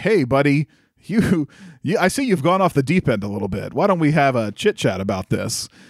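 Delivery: wholesome cartoon hero voice, sing-song and swooping. Retelling a scene where a second Superman confronts the first, wholesome cartoon Superman voice. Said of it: "very wholesome sounding, very 90s kids cartoon Superman".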